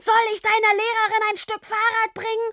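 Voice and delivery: very high, shrill, roaring bellow. A father yelling across the street at his child, bellowing. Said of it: "brüllte er weiter".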